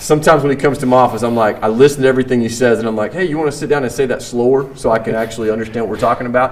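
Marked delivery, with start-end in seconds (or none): none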